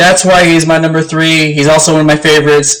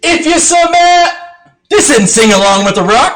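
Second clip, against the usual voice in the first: very high, very slow, drawn-out scolding; 11 semitones higher than usual. Quoting a favorite line of The Rock: imitating The Rock. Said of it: "my favorite one is like".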